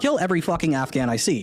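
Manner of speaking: normal talking voice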